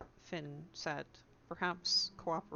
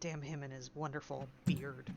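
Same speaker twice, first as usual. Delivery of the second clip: low, muttered aside under the breath; 4 semitones lower, 3 dB quieter than usual. Voicing a character's remark after a brute marches out: under her breath. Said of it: "Under her breath".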